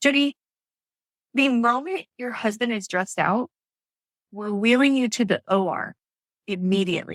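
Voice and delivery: normal talking voice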